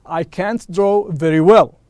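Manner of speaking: ordinary delivery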